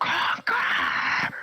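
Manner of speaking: mock angry yell. Speaker retells screaming at the ai while practicing, retelling a loud scream. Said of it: "I screamed so loud".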